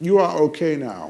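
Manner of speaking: put-on belted out loudly in a German accent. Retelling what a man said after lifting his wheelchair, Terminator-like accent. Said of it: "Terminator-like accent".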